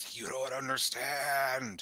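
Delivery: wet, guttural, throaty monster voice. Narrating a weeping swamp creature that speaks: wet, throaty creature voice. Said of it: "in its kind of wet, throaty voice".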